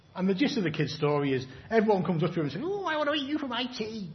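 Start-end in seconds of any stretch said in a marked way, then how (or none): 2.6-4.1 put-on very high little old lady voice. Telling a children's story to the kids, doing the voices: old lady voice. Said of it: "That was the old lady".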